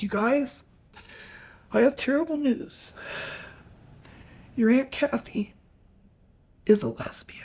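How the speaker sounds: put-on weepy, tearful, breathy, half-whispered voice. Retelling how a mother sat the kids down: imitating a crying mother. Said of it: "and she's crying".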